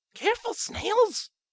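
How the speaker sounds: sharp hiss, pitched very high. Someone behind the narrator warns about the snapped twig: hushed hiss. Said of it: "a hushed voice hissed behind me".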